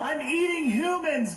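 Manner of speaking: very high, desperate screaming.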